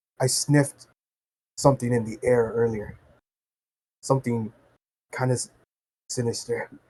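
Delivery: very quiet, low, soft, hushed half-whisper. Telling the story, the speaker voices Gurman walking up to the rat: soft half-whisper. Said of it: "in like a soft whispering type tone".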